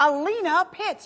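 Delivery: eager host-style announcing. Showing a guest how to introduce the next guest like a co-host: excited co-host announcement. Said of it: "say it more excited, like a co-host".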